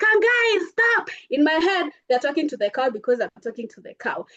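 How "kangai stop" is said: mock, high-pitched yelling. Telling a story about chasing a cow, imitating the crowd yelling. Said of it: "they're yelling at me".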